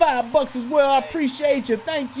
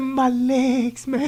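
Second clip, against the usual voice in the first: mock trembling, quavering, shaky voice, words drawn out. Retelling a cousin's answer through a bathroom door: imitating Don's shaking voice. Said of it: "His voice was shaking like that".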